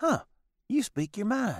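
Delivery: put-on sassy Southern waitress voice. Retelling a TV episode, quoting the waitress: sassy Southern waitress from The Simpsons. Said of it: "the old sassy Southern waitress, and she's like".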